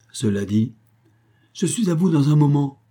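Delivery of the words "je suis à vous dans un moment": high, called-out voice. A wife calls to her husband before opening the door, crying out. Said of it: "cria-t-elle à son mari".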